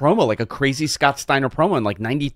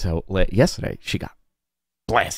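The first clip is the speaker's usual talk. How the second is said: whisper into the microphone; 6 semitones lower than usual. Telling a co-host about last night while others can hear: whispering into the microphone. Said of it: "I like that you're whispering into the microphone".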